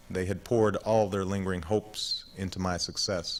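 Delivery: plain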